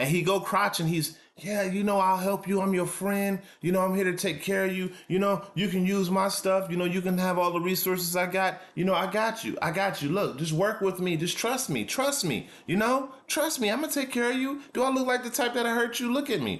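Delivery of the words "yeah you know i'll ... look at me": buttery, smooth, reassuring, coaxing sweet-talk tone. Acting out how the devil sweet-talks someone; imitating smooth sweet talk. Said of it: "That's how he talks".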